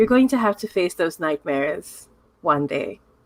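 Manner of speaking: robotic, robot-like voice. Narrating a game scene as Maria's body language softens, Maria's quiet robotic voice. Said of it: "says really quietly in her robotic voice".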